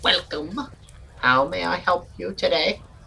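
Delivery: put-on high, cackling elderly voice. Voicing an older person behind a counter greeting arrivals: cackling old person voice. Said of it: "you just sort of hear this cackling".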